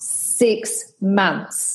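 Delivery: very clear, disembodied pronouncing voice. Recounting a voice heard while looking at hats in a shop, imitating a booming voice. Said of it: "this booming voice came in my ear and said".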